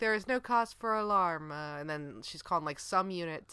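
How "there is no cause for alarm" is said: put-on calm, pleasant robotic voice, much higher. Quoting an announcement voice during an alarm, in a calm, robotic, pleasant voice. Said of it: "it's all in a very calm, robotic, pleasant voice".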